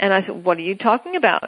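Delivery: plain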